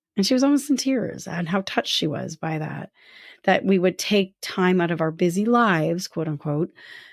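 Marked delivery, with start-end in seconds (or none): none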